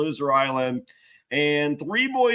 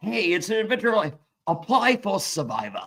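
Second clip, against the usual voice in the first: put-on British accent; 4 semitones higher than usual. Retelling a commercial inviting people to apply for Survivor: imitating Jeff in British accent. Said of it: "Jeff invites you to play for Survivor in a British accent".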